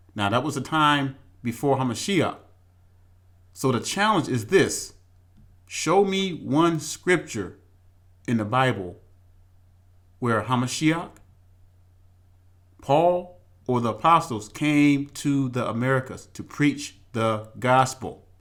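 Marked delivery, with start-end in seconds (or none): 3.6-18.2 very slow, deliberate, commanding, authoritative delivery. A speaker sets a scripture challenge for listeners, speaking very slowly. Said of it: "I'm speaking it very slowly".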